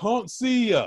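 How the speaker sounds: put-on very high, smart-aleck heckling shout. Recalling walking on stage when an audience member calls out, retelling a heckler's shout. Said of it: "someone trying to be funny just shouts out".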